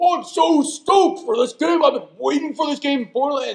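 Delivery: big, carrying, high voice. Retelling how he arrived and was heard in the hallway, imitating Marcus's booming voice. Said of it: "I hear this booming voice".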